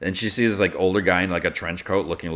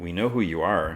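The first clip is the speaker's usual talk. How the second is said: ordinary talk, nothing marked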